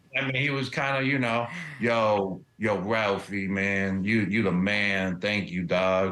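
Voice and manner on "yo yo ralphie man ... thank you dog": very slow, lazy pace, every word long and stretched. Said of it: "That was a good [name] impression".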